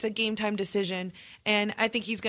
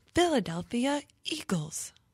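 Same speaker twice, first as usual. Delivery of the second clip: put-on synthetic computer voice, quieter; 2 semitones higher, 4 dB quieter than usual. Announcing the simulator's pick as the computer: computer voice like Siri. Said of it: "That's a good computer voice".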